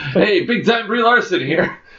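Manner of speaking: put-on very high, old-timey newsreel announcer voice. Speaker jokingly imagines an actress introducing herself, old-timey news reporter voice. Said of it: "That sounds like an old-timey news reporter".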